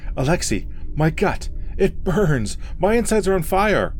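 very slow, high, drawn-out agonized cry. A man doubled over in pain cries to his friend: crying out in agony. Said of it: "Gregor cried".

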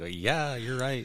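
high, sassy tone. Retelling what a sister said while doing hair: imitating sister's sassy tone. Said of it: "You're all sassy".

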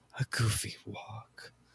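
whispered, breathy, disappointed and ashamed disapproving tone. Repeating another speaker's joke back to them: ashamed, disapproving tone. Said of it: "You said it like you were so ashamed of me".

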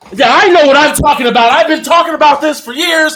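very loud, high, braggy, blustering loudmouth voice. Mocking reviewers who live at their mom's house, imitating a loud reviewer. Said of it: "most of these people who are really loud as shit".

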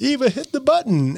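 put-on, very high, urgent shouted yell. Recounting a Smuggler's Run ride, retelling her own yell. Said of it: "And I'm yelling at her".

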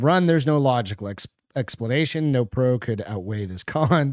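normal talking voice

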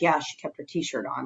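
low, soft, under-the-breath muttered aside. Retelling a man's comment on television: imitating someone muttering under his breath. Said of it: "the way he said it under his breath".

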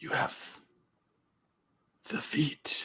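dramatic, hushed whisper. In a role-play scene, speaking to the other players, dramatically. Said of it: "Why did that sound so dramatic?".

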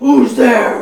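very loud, booming, growling voice. Narrating a scene outside a cave as a voice calls out, deep growling voice. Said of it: "there's this deep growling voice that goes".

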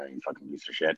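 muttering under breath. Retelling handing food to a customer, imitating mumbling under breath. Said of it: "mumble under my breath".

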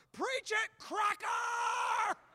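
top-of-the-lungs, very high, drawn-out shout. Retelling a man in the third row shouting out during a service: imitating someone shouting at top of lungs. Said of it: "he shouted out on the top of his lungs".

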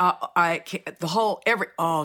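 stuttering, tripping over broken-off false starts. Praising an actress's performance excitedly, stuttering. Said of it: "see, I'm stuttering".

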